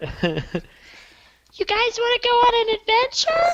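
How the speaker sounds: put-on very high, slow, swooping, sing-song baby voice. Doing an outro after being asked for a Rugrats baby voice. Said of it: "in your best Rugrats baby voice".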